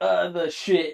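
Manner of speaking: exaggerated American accent. Imitating how the other speaker said a word: exaggerated american accent. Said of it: "the most English, like, American accent ever".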